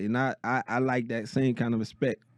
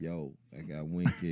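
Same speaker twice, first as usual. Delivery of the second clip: unhurried, quiet but firm, soft-spoken and stern; 6 semitones lower, 8 dB quieter than usual. Retelling how someone announced his friend by phone: imitating his slow talk. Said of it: "You know he talk slow".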